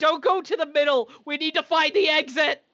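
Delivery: called-out delivery. Warning the others in character: screaming out. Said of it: "I just scream out".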